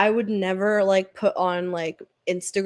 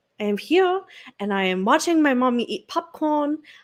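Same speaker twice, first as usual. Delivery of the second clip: high put-on dog voice; 5 semitones higher than usual. Speaker talking as the dog, in a put-on dog voice. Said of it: "I'm talking in the dog voice".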